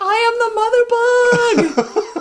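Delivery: very high, slow, powerful scream. Quoting a movie scene: imitating Ashley Judd screaming. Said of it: "Ashley Judd screaming".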